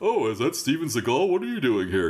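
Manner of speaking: goofy, silly voiced stingray sea creature. Showing how a floating stingray is given a voice: voicing a stingray. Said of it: "I will give the, the animals, like, voices".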